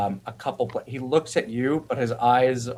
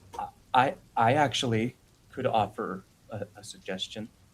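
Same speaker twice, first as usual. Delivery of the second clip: put-on nervous, anxious, stuttering boy voice, quieter; 5 dB quieter than usual. Voicing a nervous character offering a suggestion: nervous stuttering boy voice. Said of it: "the nervous boy was going to say something".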